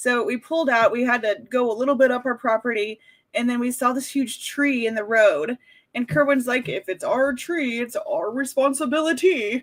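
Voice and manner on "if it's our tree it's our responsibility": slow cartoon bear character voice. Retelling what Kerwin said on seeing a tree in the road, in a Yogi Bear commercial voice. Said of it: "something from like a Yogi Bear commercial".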